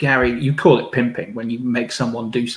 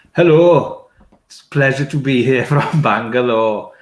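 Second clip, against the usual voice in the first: deliberately horrible put-on Welsh accent; 4 dB louder than usual. Walking onstage before a full room, greeting the audience: Welsh accent. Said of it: "It was a Welsh accent".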